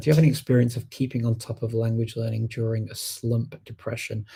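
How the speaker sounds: usual speaking voice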